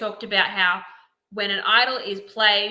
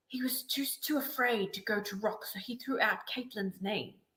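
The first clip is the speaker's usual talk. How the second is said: hushed, very soft fake South African accent; 13 dB quieter than usual. Explaining how another player voted, in a put-on south african accent. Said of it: "now I'm putting the South African accent on".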